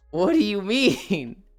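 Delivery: put-on befuddled, confused tone. Retelling own reaction to a cousin calling the game anime: imitating own befuddled self. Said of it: "I was befuddled".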